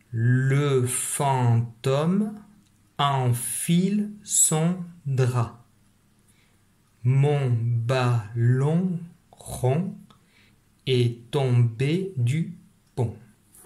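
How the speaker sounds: very slow, evenly paced reading aloud. Reading a sentence aloud for a child to follow with a finger: read slowly. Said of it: "donc je suis allé lentement".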